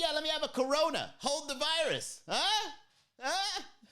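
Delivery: very high, overeager, try-hard joker voice. Imitating the guy at the bar who tries to be funny. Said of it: "that guy is trying to be funny".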